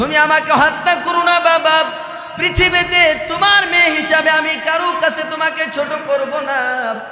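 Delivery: crying, pleading shout.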